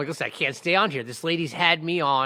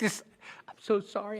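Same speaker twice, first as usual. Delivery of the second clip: weepy, tearful, breathy half-whisper; 6 semitones higher, 7 dB quieter than usual. Retelling what a crying prosecutor said in court: imitating someone crying. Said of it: "she was crying".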